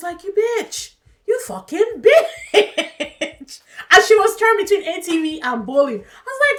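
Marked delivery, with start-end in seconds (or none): 0.2-3.6 play-acted very slow, high, furious outburst. Recounting someone going back on an agreement, retelling an angry outburst. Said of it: "I was so mad".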